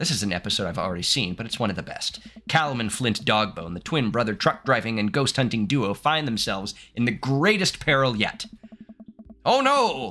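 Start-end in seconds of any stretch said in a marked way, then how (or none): 9.4-10.1 high, slow mock Canadian accent. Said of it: "sorry to anyone that's Canadian in the chat".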